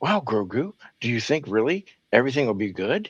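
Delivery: exaggerated, swooping cartoon character voice. Imitating a man talking to his cat while driving, Disney voice. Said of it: "He talks to him in that Disney voice".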